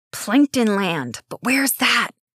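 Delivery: hissed through still lips, mouth not moving. Onstage before a murmuring audience, one performer prompts another, hissed without moving mouth. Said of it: "Nix hissed".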